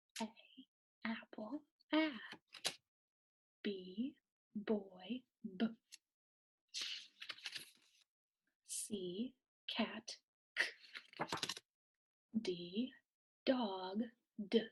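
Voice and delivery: very slow, soft whisper. Going through letter sounds so learners can say them aloud: whispering. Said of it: "I'm going to whisper".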